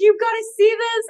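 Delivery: excited, high-pitched pressing tone.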